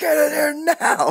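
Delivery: put-on very high, drawn-out shriek. Retelling a movie scene where a cop screams at his partner: imitating a scream. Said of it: "and he just screams".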